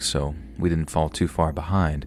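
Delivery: ordinary delivery, nothing marked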